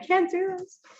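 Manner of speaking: acted-out panicked breakdown. Retelling public speaking breakdowns in college: imitating own past breakdown. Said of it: "I literally had breakdowns in college".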